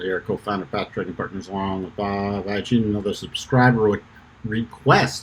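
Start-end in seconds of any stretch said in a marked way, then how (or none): 0.2-4.0 rushed, fast rattled speech. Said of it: "Sorry, I was talking too fast".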